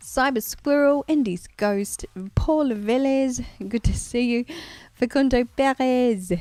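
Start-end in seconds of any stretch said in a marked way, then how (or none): 4.9-6.3 put-on French accent on a name. Reading out a viewer's name for no reason: French accent. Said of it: "I'm setting that with a French accent".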